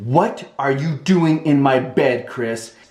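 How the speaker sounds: acted-out furious, angry, accusing woman's voice. Retelling a woman staring at him from the bed, imitating her angry question. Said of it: "She's like so angry".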